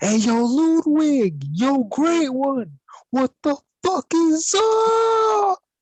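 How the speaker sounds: very high, swooping, very slow, drawn-out yell. Playing Jack, calling out to find someone in the area: Jack yelling in character. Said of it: "And Jack yells".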